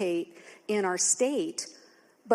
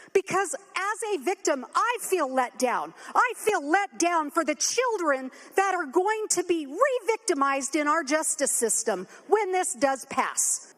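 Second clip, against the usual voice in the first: openly angry, pitched-up speech; 9 semitones higher than usual. Speaking on the floor to Madam Speaker about victims: angry. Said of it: "Yes, I'm angry".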